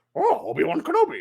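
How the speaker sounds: very high-pitched creature voice. Retelling a man at Lowe's greeting the speaker's dog Obi, Yoda voice. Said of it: "And he does this Yoda voice".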